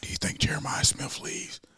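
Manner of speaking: secretive, hushed, breathy whisper. Retelling what people over there asked each other: imitating a whisper.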